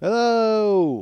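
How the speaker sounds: loud, drawn-out call, sounding distant. Pretending to podcast from the bottom of a hill: calling from the bottom of a hill. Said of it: "That's if I was at the bottom of a hill podcasting".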